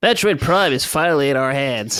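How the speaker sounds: geeky, nerdy superfan voice. Reading Metroid fans' questions aloud on request, in the nerd voice. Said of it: "gotta read them all in the nerd voice".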